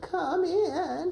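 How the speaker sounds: put-on very high, weak old-lady voice. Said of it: "Grandma, can you say".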